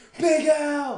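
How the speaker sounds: high, loud scream. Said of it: "I'd just scream at the television".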